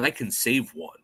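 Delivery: ordinary delivery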